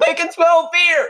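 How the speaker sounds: very high, loud, shrill dramatic shout. Quoting a line often said in TV shows: loud dramatic shout. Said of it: "That was kinda loud".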